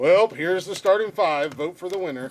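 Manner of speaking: mocking a lazy, flat delivery. Mocking a co-host's weekly post as lacking effort: imitating Jeff's half-assed post. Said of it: "Jeff half-ass, half-ass posts the starting five".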